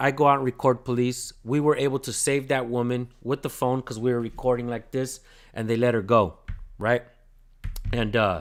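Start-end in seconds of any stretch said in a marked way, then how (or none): none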